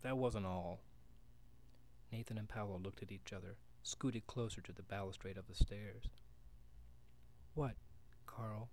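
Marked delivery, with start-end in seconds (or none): 7.5-8.7 hushed, quiet, soft voice. Mrs. Ritchie presses Carl to go on with his story, quietly. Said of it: "Said Mrs. Ritchie quietly".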